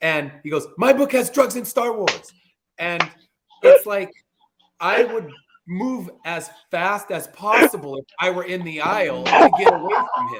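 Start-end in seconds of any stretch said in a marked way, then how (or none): 0.8-2.3 high, loud screaming pitch. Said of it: "starts screaming it at everybody".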